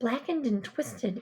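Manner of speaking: ordinary delivery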